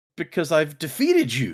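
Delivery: mock proclaiming, trying to sound strong. Retelling how Tress answers the sorceress: imitating Tress proclaiming. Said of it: "she proclaims".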